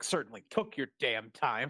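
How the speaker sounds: irritated, annoyed, pissed-off griping tone. Retelling an actor's line from a show: imitating Kimberly being pissed off. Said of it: "And then Kimberly's like".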